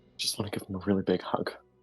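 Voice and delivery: almost a whisper. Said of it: "almost in a whisper".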